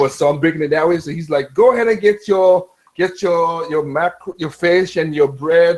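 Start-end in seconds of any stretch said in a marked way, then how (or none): 1.5-5.8 put-on heavy Jamaican accent, laid on thick. Retelling a funny video, quoting the hurricane: imitating a strong jamaican accent. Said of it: "the accent is so strong".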